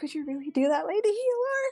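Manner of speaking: high, begging, pleading voice. Voicing Jezebel, hands together, asking the healer for help: pleading. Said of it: "pleading to, uh, Lady Alara".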